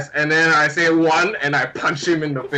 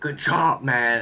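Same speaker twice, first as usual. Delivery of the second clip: hushed, half-whispered, under the breath; 2 semitones lower, 4 dB quieter than usual. A player mid-fight, punching an opponent who keeps laughing, half-whispering. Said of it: "I whisper like".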